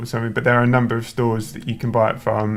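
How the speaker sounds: normal talking voice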